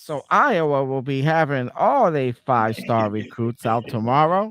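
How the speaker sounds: put-on, hyped-up pundit voice. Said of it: "this is how they said".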